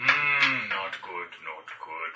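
very low, ominous, foreboding murmur. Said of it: "And this is ominous".

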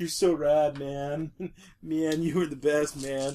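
pot-smoking stoner guy voice. Imagining a stoner guy praising someone: stoner guy voice. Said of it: "this stoner guy just being like".

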